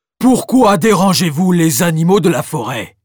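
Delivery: big, loud bear voice. Reading a story aloud, as a bear questioning the children, in a deep bear voice. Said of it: "questionne-t-il de sa voix grave".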